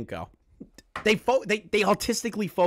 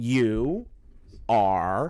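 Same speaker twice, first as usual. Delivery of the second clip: low, drawn-out, slow delivery. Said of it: "I'm gonna say it real slow".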